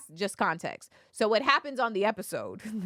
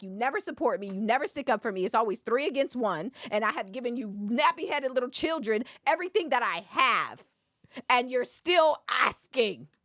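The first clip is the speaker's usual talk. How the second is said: mock upset screaming tirade; 5 semitones higher than usual. Retelling a woman in a clip screaming at Cecil; retelling her screaming. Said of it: "She's screaming at Cecil because she's like".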